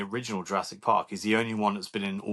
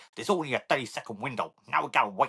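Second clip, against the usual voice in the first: clumsy, bad, put-on American accent; 4 semitones higher than usual. Discussing an actor's movies, the speaker quotes his scene in a bad american accent. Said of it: "And that's exactly how he sounds".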